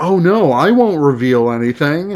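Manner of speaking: ordinary talk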